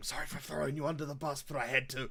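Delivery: whispered line in a put-on voice. Speaking in character to another figure in the scene: whispering in character. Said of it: "I'll just whisper to him".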